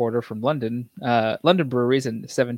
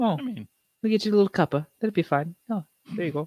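pitched-up, doting, fussing character voice; 6 semitones higher than usual. Speaker explaining porter brewing history briefly slips into a Mrs. Doubtfire voice. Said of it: "I turned into Mrs. Doubtfire for a half second".

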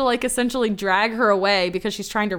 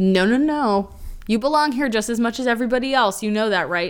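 usual speaking voice

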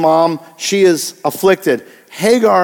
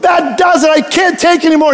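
very high, stressed-out, fed-up outburst; 10 semitones higher than usual. Retelling a Calgon bath ad scene, imitating a stressed-out woman. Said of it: "but she was so stressed".

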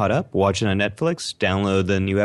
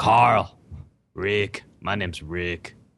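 put-on raspy, hoarse character voice. Asked about his voice for Rick, the speaker shows Rick calling Carl. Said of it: "Rick calling Carl".

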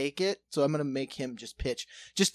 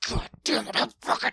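high, rough, fed-up, exasperated outburst; 7 semitones higher than usual. Retelling shouting from the mound during a game; acting out frustration. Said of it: "getting so frustrated".

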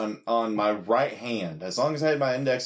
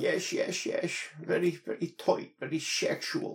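soft, breathy, put-on Dutch accent; 5 semitones higher, 6 dB quieter than usual. Retelling what a man said, done in a Goldmember voice. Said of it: "as Goldmember from the movie Goldmember in that voice".

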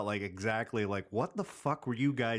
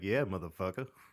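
ordinary delivery

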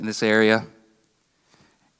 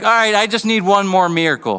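higher-pitched, louder, mocking tone. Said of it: "in a mocking tone".

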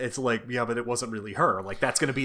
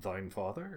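muttered, much quieter, lower pitch; 3 semitones lower, 11 dB quieter than usual. Retelling a movie scene where Thor looks at Iron Man: Thor under his breath. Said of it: "goes under his breath".

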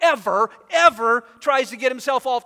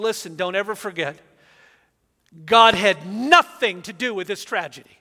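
put-on stern voice, lower; 4 semitones lower than usual. Retelling a pastor's words to his congregation: imitating a stern voice. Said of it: "in very stern voice".

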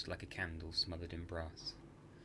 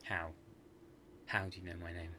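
ordinary delivery, nothing marked

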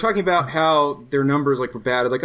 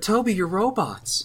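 slow, soft-voiced, gentle delivery; 4 semitones higher, 4 dB quieter than usual. Doing an impression of Violet from the show: Violet impression. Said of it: "That's my Violet impression".

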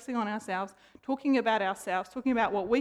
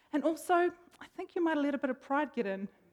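mock kindly, really kind, gentle tone; 4 semitones higher than usual. The speaker retells what a kind man told him: imitating someone speaking kindly. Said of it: "he goes really kindly".

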